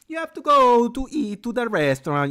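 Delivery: English spoken with an Italian accent. Praising accents, the speaker demonstrates an Italian English accent. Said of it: "Like when you have like an Italian English accent".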